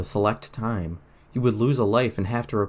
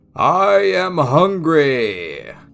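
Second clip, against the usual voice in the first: loud, booming, pitched-up giant voice; 7 semitones higher, 8 dB louder than usual. Narrator reading the giant golem's line, deep and echoing. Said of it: "Polychus's deep voice echoed".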